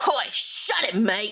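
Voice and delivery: slow, unhurried, easy put-on Australian accent. Reading a scene aloud, voicing a male character in an Australian accent. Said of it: "I gave him an Australian accent".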